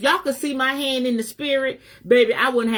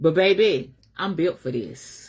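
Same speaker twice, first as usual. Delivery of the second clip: deep chest voice, lower, with bass; 5 semitones lower than usual. Answering people who talk about the speaker: with bass in the voice. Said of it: "I say that with bass in my".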